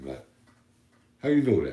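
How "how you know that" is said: put-on Brooklyn accent. Imitating someone from Brooklyn talking: imitating a Brooklyn accent. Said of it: "I recognize a Brooklyn accent".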